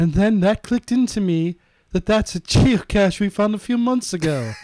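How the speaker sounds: speaking with British accent.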